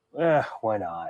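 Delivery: put-on flat deadpan delivery. Recapping a scene where Turlough whines and the Doctor answers, imitating the Doctor, deadpan. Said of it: "the Doctor just kind of like deadpan and going".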